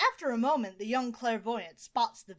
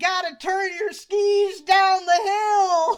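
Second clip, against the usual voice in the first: very loud, shrill, high holler, drawn out; 9 semitones higher, 12 dB louder than usual. Retelling a stranger on a chairlift shouting at a skier: imitating someone yelling. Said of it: "yelling at someone skiing down the hill".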